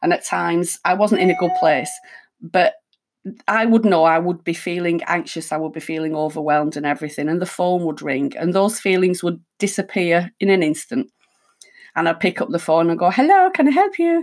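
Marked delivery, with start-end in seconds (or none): 13.1-14.2 high, loud, nice, jolly, happy voice. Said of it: "in a nice, jolly, happy voice".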